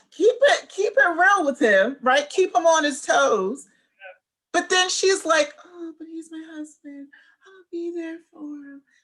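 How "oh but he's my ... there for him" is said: soft, little half-whispered tone. Imitating Paige talking about her husband, in her little half-whisper tone. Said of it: "with her little whisper tone".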